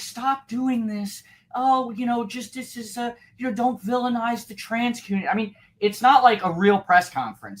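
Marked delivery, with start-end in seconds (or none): 0.0-5.3 mocking, pitched-up, preachy, pleading salesman voice. Retelling a politician's press conference: mocking a preachy political salesman. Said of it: "over political, like, salesman to say".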